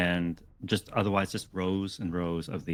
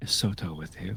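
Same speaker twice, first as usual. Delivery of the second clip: furtive, secretive and guarded aside. Philoan, sitting next to the player, asks a question in a hushed tone. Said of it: "he's speaking in a hushed tone".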